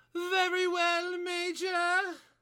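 put-on very high pitch drifting into German accent. Reading a scene aloud as a character who answers the Major: Margaret Thatcher voice slipping German. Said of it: "she turned German there at the end".

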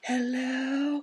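very high, stretched-out, drawn-out call. Retelling how Callum sounds compared to the loud others: imitating Callum sounding very quiet. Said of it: "Callum's like".

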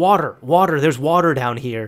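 put-on, loud hollering yell, calling out. Retelling yelling to a girlfriend about water in the house: imitating someone yelling. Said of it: "I start yelling to my girlfriend".

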